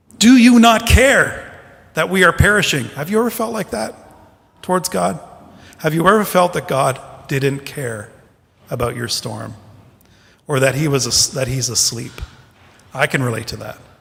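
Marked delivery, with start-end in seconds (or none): 0.2-2.9 loud, high angry cry, reproachful and pleading. Retelling the disciples crying out in the storm: imitating an angry cry. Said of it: "an anger in their voice".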